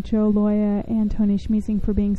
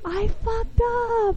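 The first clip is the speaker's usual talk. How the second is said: gleeful, beaming, very high cheerful voice; 13 semitones higher, 3 dB quieter than usual. Demonstrating how to own a mistake, say it like you're so happy. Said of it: "And you just say it like you're so happy".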